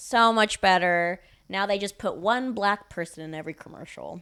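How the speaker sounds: loud, sarcastic, sham-sounding tone. Joking about Hollywood with another speaker, sarcastic tone. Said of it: "If you couldn't tell by my tone, I'm being sarcastic".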